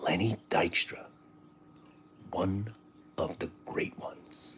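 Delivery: very hushed, grave, dead-serious close whisper. Retelling an interview, imitating Jim Cramer whispering. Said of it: "So he gets the whisper voice on".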